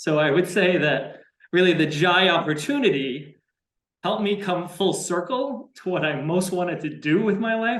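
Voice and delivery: choked-up voice, catching with emotion. Talking about helping people with their kids, the speaker gets emotional: choked up. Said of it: "I'm getting choked up just thinking about it".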